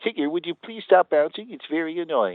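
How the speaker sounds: high, put-on cartoon voice. Doing a voice after Rabbit gets mentioned, Rabbit voice. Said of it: "since he mentioned rabbit ... I just thought I'd do a voice while I'm here".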